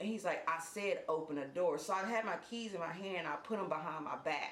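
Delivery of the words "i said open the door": usual speaking voice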